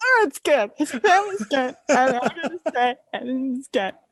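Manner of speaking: mock sobbing. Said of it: "sobbing because I'm like".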